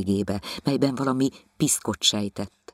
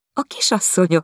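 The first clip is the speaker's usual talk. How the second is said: high, flirty, mocking tease, laughing through words; 8 semitones higher, 5 dB louder than usual. Anna answers Jancsi's question, laughing heartily, coquettish and mocking. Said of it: "nevetett Anna a szívéből, kacéran és csúfondárosan".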